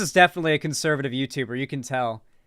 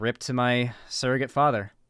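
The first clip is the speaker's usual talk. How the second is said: sad, lower-pitched voice; 2 semitones lower, 4 dB quieter than usual. Speaker quotes how Diesel Patches ended his video, imitating Diesel Patches saying it sadly.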